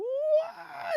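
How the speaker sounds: very high, shocked squeak.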